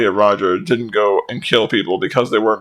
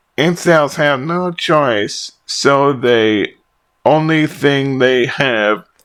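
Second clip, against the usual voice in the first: dopey, dim-witted put-on voice, pitched up; 5 semitones higher than usual. Reading a written comment aloud, the speaker is voicing the comment's writer. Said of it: "talk however I think would best suit the voice of the person who".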